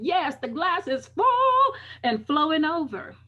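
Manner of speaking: exuberant, high, loud, bright joyful burst.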